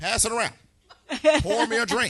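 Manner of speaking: booming, shrill, very loud, high-pitched call. On the Loose Lip Show, speaker performs as Barack Obama addressing Miss Jackie; Barack Obama impression. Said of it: "giving me some Barack Obama".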